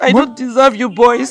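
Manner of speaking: tearful, crying while speaking. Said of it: "Stop crying".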